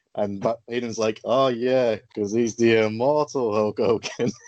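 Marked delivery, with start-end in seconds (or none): 1.3-4.3 put-on dry, sarcastic commentator voice. Quoting a wrestling commentator's sarcastic reply to his co-commentator, imitating Bobby Heenan's dry tone. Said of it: "And he really dry tone".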